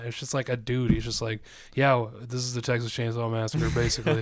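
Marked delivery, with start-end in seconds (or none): 1.7-4.2 utterly boring, dull, uninteresting narrator voiceover. Imitating a movie's opening voiceover: imitating an uninteresting voiceover. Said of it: "the most uninteresting voice of all time".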